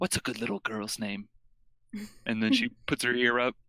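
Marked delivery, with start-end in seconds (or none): 0.0-1.3 hushed, soft, secretive-sounding half-whisper. Retelling a story, the speaker voices her half-whispering to a giant badger. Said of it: "she whispers to the badger".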